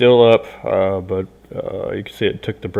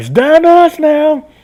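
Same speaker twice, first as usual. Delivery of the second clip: very loud, high-pitched yell; 10 dB louder than usual. Game master voicing the last fighter refusing to put down weapons, yelling. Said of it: "he just yells back".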